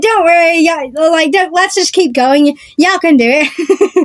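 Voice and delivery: sarcastic, teasing, tongue-in-cheek cheering tone. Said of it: "Kinda saying it in, like, a sarcastic way".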